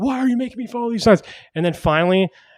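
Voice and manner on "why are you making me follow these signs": mock shouted, high-pitched yell. Retelling following signs all night, imitating own past yelling.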